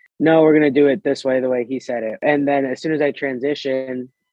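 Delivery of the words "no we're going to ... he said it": normal talking voice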